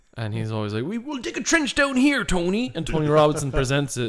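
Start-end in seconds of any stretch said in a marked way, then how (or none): 0.9-2.8 put-on high-pitched West Country accent. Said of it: "he's West Country".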